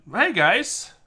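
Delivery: jokey high put-on voice. Greeting listeners after dropping the serious act: back to high-pitched voice. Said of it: "Back in, uh, high pitch".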